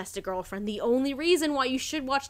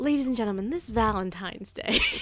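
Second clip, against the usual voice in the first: sultry ad-announcer voice, much lower in pitch; 3 semitones lower than usual. Host addressing the listeners as a joke bit, sultry advertisement voice. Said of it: "slipping into a sultry advertisement voice".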